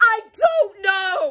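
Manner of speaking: loud voice cracking on the words. Arguing over drawing a flag, the speaker answers with a voice cracking. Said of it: "my voice is cracking".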